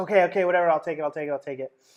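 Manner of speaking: play-acted pleading, caving-in voice, repeated over and over. Retelling an argument over a check, imitating a woman pleading. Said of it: "Then she started pleading with me".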